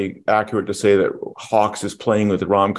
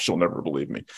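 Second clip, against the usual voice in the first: low, soft mutter under the breath. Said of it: "he mutters to himself".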